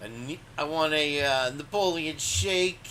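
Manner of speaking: put-on New Jersey accent. Retelling a scene with Austin, speaker imitates Austin's New Jersey accent. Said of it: "with his New Jersey accent there".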